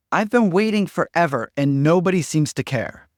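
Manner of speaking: loud, high-pitched, upset, demanding tone.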